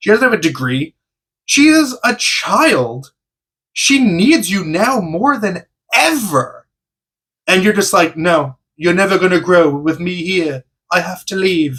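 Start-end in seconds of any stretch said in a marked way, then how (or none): 8.2-11.8 poor, bad, put-on British accent. Speaker retells a character's line from a show: bad British accent. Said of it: "Bad British accent, sorry".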